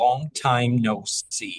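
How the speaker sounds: put-on British accent. Coaching accents, the speaker demonstrates the line in a British accent. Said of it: "try it British".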